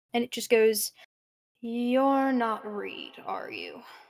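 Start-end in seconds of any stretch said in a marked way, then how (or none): 1.6-3.8 eerie, spooky, echoing voice. A voice echoes through the cabin asking if the listener is Reed: spooky echoing voice. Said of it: "a voice that kind of echoes through the cabin in a spooky way".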